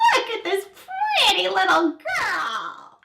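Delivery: swooping, cackling storybook witch voice, pitched way up. Asked by a child to say a sentence, mommy uses a witch voice. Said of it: "say something to me in your witch voice".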